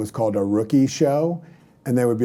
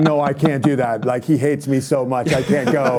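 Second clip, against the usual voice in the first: teary, crying, pleading tone; 3 semitones higher than usual. Retelling rookies begging to skip the rookie show: imitating crying rookies. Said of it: "sweating, crying".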